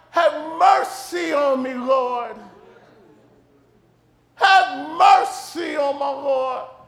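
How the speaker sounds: drawn-out, very slow weeping cry. Retelling a friend's hospital call in pain: imitating Bobby Hardy crying out. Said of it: "and he's crying".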